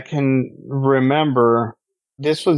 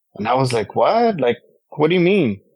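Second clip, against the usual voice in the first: ordinary talk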